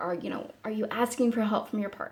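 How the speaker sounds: ordinary delivery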